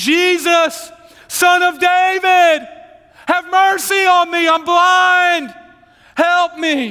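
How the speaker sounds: very high, very slow, desperate pleading cry. Acting out a blind beggar calling to Jesus: desperate crying out for help. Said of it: "Bartimaeus is screaming for Jesus' help".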